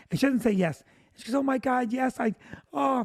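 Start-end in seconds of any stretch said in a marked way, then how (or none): 1.3-3.0 put-on crying voice, pitched higher. Retelling a proposal on one knee, imitating Vicky crying. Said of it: "And she's crying and crying".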